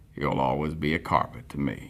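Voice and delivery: quiet, deep narrator tone. Musing about a carpet as an example topic: Morgan Freeman voice. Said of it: "I'll start to talk like Morgan Freeman".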